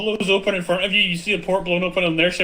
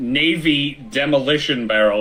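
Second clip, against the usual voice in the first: ordinary delivery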